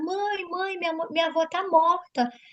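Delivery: desperate, sobbing crying voice. Retelling a daughter's phone call: imitating Gabriela crying desperately. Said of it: "tava chorando, desesperada".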